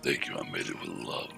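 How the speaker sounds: very low, creaky, rough orc voice. Repeating a past line of an orc fighter chef: Zlay orc voice. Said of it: "That was one of my lines one of the times".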